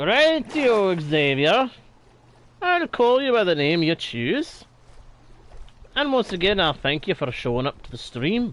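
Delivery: odd, half-right put-on Scottish accent. Streamer greeting a viewer who joined the stream, in a weird scottish accent. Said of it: "I'm doing a weird imitation of a Scottish".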